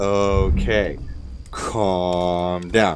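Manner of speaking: ordinary talk, nothing marked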